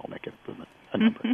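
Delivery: put-on breathy near-whisper with a soft French accent. Quoting the fund's then managing director from a meeting, in a French accent. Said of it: "he said it with a French accent".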